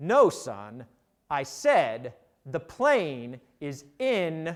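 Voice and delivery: put-on grave, very ominous voice, low pitch. Retelling what a general replied to your colleague: retelling an ominous reply. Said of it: "replied in a very ominous tone".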